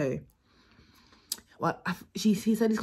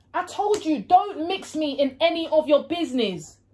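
high, loud, shouted fake argument. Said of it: "act like I'm having an argument".

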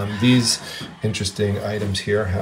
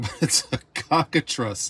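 straight-faced, fighting off a laugh; 4 semitones higher, 3 dB quieter than usual. Naming the creature on a plate: trying not to laugh. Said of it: "I'm gonna try to say this without laughing".

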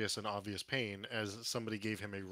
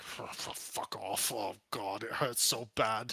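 slow, pained, angry, stumbling, stammering voice. Voicing an injured patron snapping at a helper: scowling, in pain. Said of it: "He kinda scowls at you".

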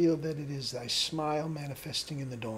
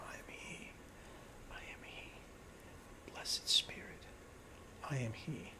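progressively much quieter, lower and slower; 2 semitones lower, 11 dB quieter than usual. Demonstrating repeating a meditation mantra aloud, getting softer each repetition. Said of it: "gradually getting softer each time".

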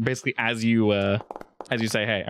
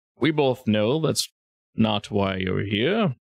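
put-on chuckling delivery. Retelling how a man answered, chuckling to himself: retelling a chuckling remark. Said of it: "he sort of chuckles to himself and says".

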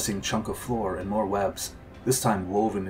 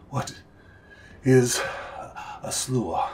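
very slow, winded, heavy-breathing delivery; 4 semitones higher than usual. Reading a wounded monk's question after the fight: breathing heavily. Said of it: "He glanced carefully over the edge".

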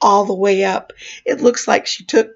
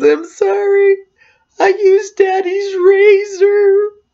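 put-on very high sobbing, razor drawn out; 11 semitones higher, 4 dB louder than usual. Retelling a young sister's apology after a razor accident: imitating someone crying. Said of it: "Carolee starts to cry".

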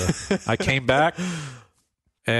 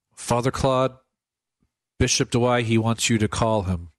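ordinary talk

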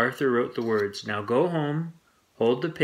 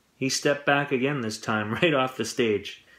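ordinary delivery

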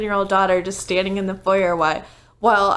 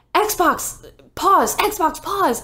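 panicked, high-pitched urgency; 9 semitones higher than usual. Retelling trying to stop the TV as family walks in, retelling a panicked command. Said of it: "I'm panicking".

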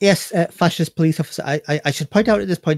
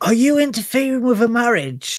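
stage whisper with swooping pitch; 6 semitones higher than usual. Voicing a player character in a tabletop scene: stage whisper. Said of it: "Clara's gonna sort of stage whisper".

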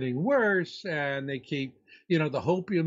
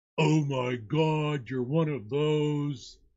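put-on computer voice, slower. Speaker acting out asking an AI about Planet X, as a Google AI impression. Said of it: "my impression of Google-powered AI intelligence".

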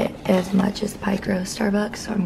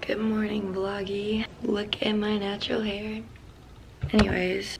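fresh-out-of-bed, just-woke-up morning voice; 6 dB quieter than usual. Vlogger greeting viewers right after waking up, just-woke-up voice. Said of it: "sorry my voice is like this because I literally just woke up".

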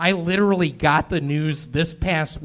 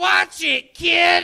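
very high-pitched put-on character voice; 14 semitones higher, 4 dB louder than usual. During a stand-up set, doing the taxi driver from Home Alone 2. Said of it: "my impression of the taxi driver in Home Alone 2".

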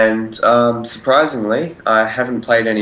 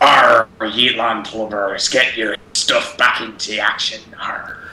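put-on pirate captain voice. Describing doing all the pirate voices, the speaker launches into a pirate voice. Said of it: "Perry and I were doing all the pirate voices".

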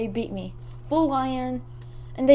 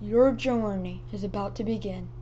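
put-on, deep, really manly macho voice; 4 semitones lower, 4 dB quieter than usual. Reading lines for an audience who liked it, really manly voice. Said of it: "I'm gonna say it in a really manly voice".

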